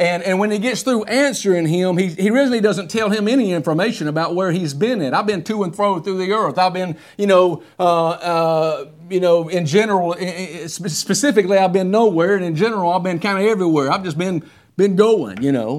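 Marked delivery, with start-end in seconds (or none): none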